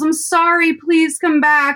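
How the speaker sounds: high, pleading mock yell.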